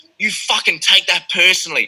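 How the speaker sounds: acted furious outburst. Retelling a fight night, the speaker replays what he said in the ring, retelling own fury. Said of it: "so furious".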